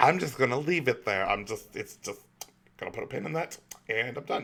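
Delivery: put-on lispy voice. Imitating the other speaker shrugging off a game opinion: imitating Spectre's lispy voice. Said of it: "I say that in my, my typical lispy voice".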